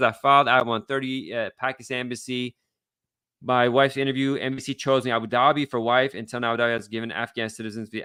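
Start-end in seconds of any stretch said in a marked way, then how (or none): none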